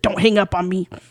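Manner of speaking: acted sinister, menacing tone. Retelling a caller speaking to a woman about to hang up, in a mock-sinister tone. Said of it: "in a more sinister tone".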